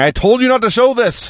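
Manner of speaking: high, shrill, mock all-out screaming outburst. Retelling a wrestling promo in which Ivan screams at the others: imitating someone screaming. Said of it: "Ivan is screaming".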